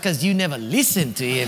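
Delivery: quick muttered undertone. Recounting a conversation with a couple, retelling a mutter under breath. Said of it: "I said under my breath".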